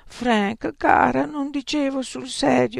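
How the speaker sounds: exclaiming. A character exclaims to someone who has burst into sobs. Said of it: "esclamò Erro".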